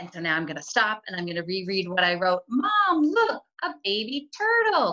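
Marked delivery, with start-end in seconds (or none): 2.5-4.9 very high, thrilled, drawn-out shout with swooping pitch. Reading a story line aloud as Kyle: Kyle's excited yell. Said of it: "Kyle yelled".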